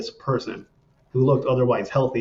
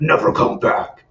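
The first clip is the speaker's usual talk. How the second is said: loud, crazy, dark, evil-sounding voice. Retelling what a little girl said while walking past: imitating a super crazy dark evil voice. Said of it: "in this, like, super crazy, dark, evil voice".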